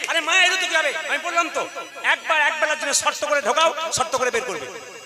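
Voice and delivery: shrill, loud reprimanding tone.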